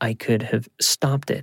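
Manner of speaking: ordinary delivery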